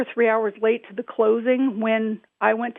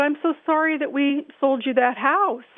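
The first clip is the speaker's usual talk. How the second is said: put-on sobbing, weepy, tearful crying voice; 3 semitones higher than usual. Retelling a phone call from a caller who kept apologizing: imitating someone crying. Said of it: "this lady crying and crying".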